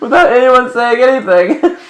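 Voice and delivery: talking through laughter. Apologizing for laughing while describing someone shutting off lights: laughing while talking. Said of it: "I'm so sorry, I'm laughing".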